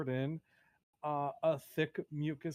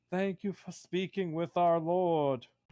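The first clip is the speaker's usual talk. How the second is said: loud shouted line; 2 semitones higher, 5 dB louder than usual. Narrator voices a priest at the top of a pit, shouting down to the group. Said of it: "and he shouts".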